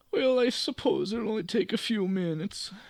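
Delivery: slight put-on Italian accent. Narrating a story, voicing a character's reply in a vaguely Italian accent. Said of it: "I feel like vaguely Italian now".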